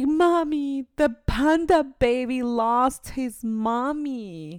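put-on very slow, high, tearful sob, mommy drawn out. A mother retells what her crying daughter said, imitating a crying child. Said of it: "she just kept crying and crying and crying".

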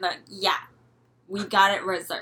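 put-on hateful, spiteful-sounding voice. Retelling what 12-year-old girls said when they claimed the room: mimicking girls' hate voice. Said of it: "So that's your hate voice?".

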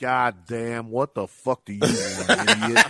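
mock-grumpy voice. Speaker tells people at work how they'd answer the phone; mock-grumpy phone answer. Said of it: "Just a grumpy old bastard".

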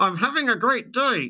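very high pitched, forced through clenched teeth. Explaining that the way something is said shows feelings; through gritted teeth. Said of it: "with gritted teeth".

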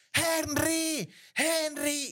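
very high-pitched, shrill hollering. A speaker recounts a man yelling a name while hitting someone, imitating a man yelling. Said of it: "Entonces el man gritaba".

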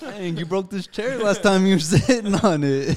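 high, loud teasing laughter.

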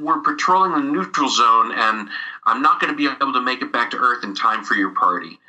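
normal talking voice

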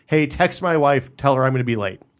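usual speaking voice

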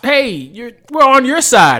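high, loud, mock screaming yell.

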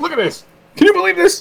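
high, loud, squealing whine, put-on. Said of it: "Now you're turning into Jerry Seinfeld".

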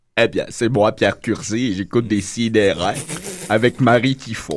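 dropped low and taken slow. Doing a requested Pierre Curzi impression for the others: Pierre Curzi impression. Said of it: "mon imitation de Pierre Curzi".

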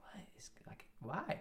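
hushed English whisper.

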